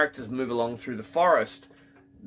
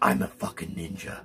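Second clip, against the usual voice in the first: hushed, deep, scary tough-guy whisper, menacing; 7 semitones lower, 4 dB quieter than usual. Describing Adrien Brody's role, the speaker mimics his deep tough-guy voice. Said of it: "He's doing that voice like this".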